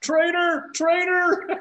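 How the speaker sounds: loud, high-pitched yelling.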